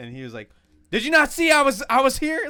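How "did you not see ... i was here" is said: very loud, very high, shrill angry yell. Retelling an encounter, imitating Eric pissed off. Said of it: "he's all pissed off".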